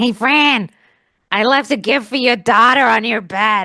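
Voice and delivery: put-on New Jersey accent, loud and slow. Retelling a message he sent after World's Toughest Mudder, in a put-on New Jersey accent. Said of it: "I don't know why he's from New Jersey".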